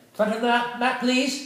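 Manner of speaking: put-on curt, clipped, bossy British accent, very high. Showing how Elaine gives cues about the mat, Elaine's clipped, bossy British accent. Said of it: "she's a little bit clipped with her British accent".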